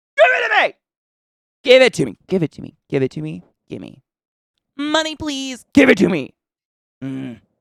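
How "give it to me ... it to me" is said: very loud, very high, shrill, swooping yell. Demanding longer videos from TikTok: yelling at TikTok. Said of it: "I'm yelling at TikTok".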